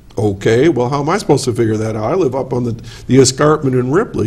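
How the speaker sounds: ordinary talk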